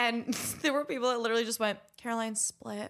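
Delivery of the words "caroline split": mock sweet voice, quieter. Speaker retells what guests said when sharing favorite memories: retelling a really sweet voice. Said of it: "Like in really sweet voice".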